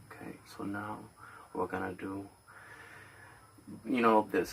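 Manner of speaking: breathy ASMR whisper close to the mic. Retelling an ASMR video with a guy in rubber gloves: imitating an ASMR guy's voice. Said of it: "he talks like this".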